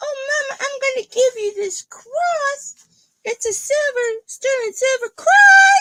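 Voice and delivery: shrill, very high, loud, cross, stretched-out voice. Retelling how a friend gives a silver cross, imitating Nikki's voice. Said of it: "You love that impression".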